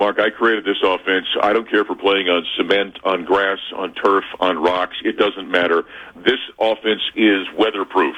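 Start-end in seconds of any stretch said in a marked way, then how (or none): none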